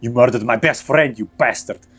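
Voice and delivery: enraged, furious screaming, acted. Voicing a man who attacks a player: screaming in character. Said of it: "as this man keeps screaming".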